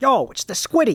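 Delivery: put-on New York voice. Asked to do it again in a New York voice, New York accent. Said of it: "Can you do it again in your New York voice".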